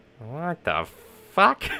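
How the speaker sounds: squawking, high, loud parrot voice. Describing a voice that plays in the head all day, parrot voice. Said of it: "I always say it in that fucking parrot voice".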